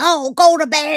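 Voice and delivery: high, loud nagging tone. Repeating the mom's line from the story: imitating a nagging mom. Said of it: "he's got that nagging".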